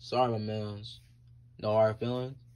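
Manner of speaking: put-on very deep, low, soft Spanish accent.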